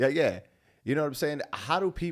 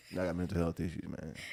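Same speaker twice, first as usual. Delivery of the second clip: sad, mopey, very deep and quiet voice; 7 semitones lower, 10 dB quieter than usual. Mimicking people who announce they have mental health issues, mock-sad, mopey. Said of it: "they sad with it too".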